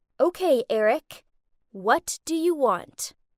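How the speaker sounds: put-on icy, chilly, cold, slow delivery. Narrating a tense scene, turning to speak to eric: cold voice. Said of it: "in a cold voice I said".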